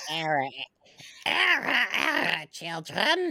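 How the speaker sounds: put-on old hag voice. Asked to do the hag, the speaker performs her: old hag voice. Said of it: "It's my hag voice".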